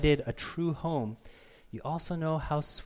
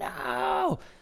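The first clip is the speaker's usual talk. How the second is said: put-on mimicked child screaming, higher. Retelling a daughter's refusal to take a timeout: imitating a child screaming.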